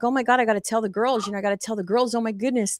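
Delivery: mock thrilled, fast, bubbling-over excited chatter. Retelling finding items in a store: retelling own excitement. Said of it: "And I was so excited".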